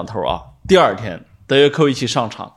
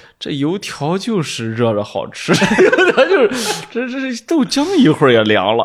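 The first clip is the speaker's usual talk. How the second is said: sarcastic, needling Shandong dialect, swooping high; 8 semitones higher than usual. Retelling how Dad went door to door, speaker mimics dad's sarcastic Shandong dialect. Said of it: "用山东话挨个屋门口，那阴阳怪气的说".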